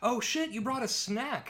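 high-pitched, screamed vampire monster outburst. Retelling a movie scene where a vampire picks up a scent: imitating a vampire screaming. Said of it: "he is screaming like".

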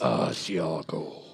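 low, slow, drawn-out sexy voice.

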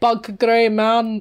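put-on Scottish accent. Asked to redo a quick poem with a Scottish accent, the speaker tries: Scottish accent. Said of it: "Can you do it with a Scottish accent?".

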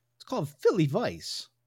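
loud, high, half-hearted put-on voice. Naming the beer just poured: Christopher Walken voice. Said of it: "that was some fucking Christopher Walken".

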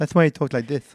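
slight, put-on little lisp. Explaining why a bodybuilder talked that way: Lou Ferrigno impression. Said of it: "please don't do that voice".

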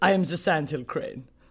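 put-on German accent. Voicing the sandhill crane as a german: german accent. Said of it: "He's back and he's German this time".

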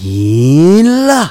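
happy rising tone.

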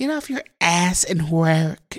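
soft, breathy, irritating half-whisper. Mock what Kim K said in the video, in a half-whispery, annoying Kim K voice. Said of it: "whispery and annoying voice".

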